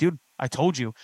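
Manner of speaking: ordinary delivery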